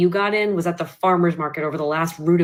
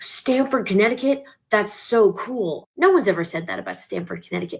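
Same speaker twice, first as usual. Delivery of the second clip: eerily cheerful, relentlessly positive, upbeat tone; 3 semitones higher than usual. Retelling what a date said after he turned positive: imitating an eerily positive tone. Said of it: "He is so positive in a way that was kind of eerie".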